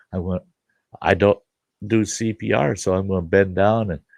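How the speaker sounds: plain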